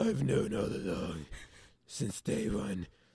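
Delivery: put-on, poor, breathy, hushed, whispered superhero voice. Discussing how Batman handles mysteries, doing a shitty Batman impression. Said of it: "This is a shitty Batman impression".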